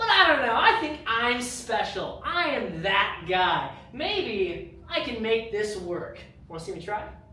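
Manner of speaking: slow, sarcastic, boastful tone.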